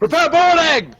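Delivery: shouting. Commanding a ship's crew as Valdis swings across, shouting an order. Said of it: "I shout".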